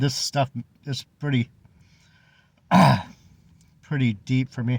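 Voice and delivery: voice breaking with tears. Talking about giving things up and leaning on friends and family, getting teary-eyed. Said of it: "sorry, I'm getting teary-eyed".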